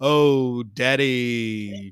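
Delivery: slow, unhurried, drawn-out, stretched-out words. Showing how the sounds should go rather than quick: slow. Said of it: "it should be like this, you know. ... it should be slow".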